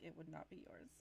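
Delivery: low, hushed voice dropped under the breath. Retelling her reply to being asked about ripping heads off, retelling her lowered voice. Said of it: "she kind of lowers her voice and like leans in".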